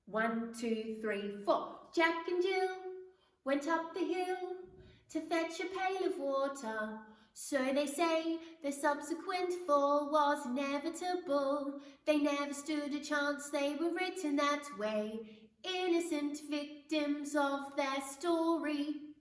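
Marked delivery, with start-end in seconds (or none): 1.9-18.9 British English accent, pitched up. Performing a Matilda the musical passage after a four-count, English accent. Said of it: "you'll notice I'm doing an English accent".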